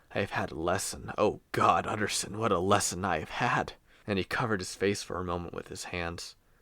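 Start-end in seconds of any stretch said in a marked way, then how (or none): 0.2-3.8 deathly sick man's changed voice. Narrator reading the doctor's reply to the lawyer, in a deathly sick, changed voice. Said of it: "looking deathly sick. / looking deathly sick. He did not rise to meet his visitor, but held out a cold hand and bade him welcome in a changed voice. / sat Doctor [name], / looking deathly sick. / but".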